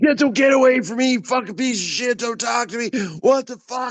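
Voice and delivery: very high, enraged, furious screaming. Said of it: "He starts screaming at me".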